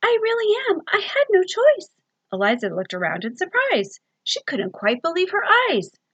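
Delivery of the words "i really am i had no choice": tiny, very high, wee little creature voice. Reading a story aloud, a creature apologizing: little tiny voice. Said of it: "came a little tiny voice".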